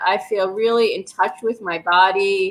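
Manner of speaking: normal talking voice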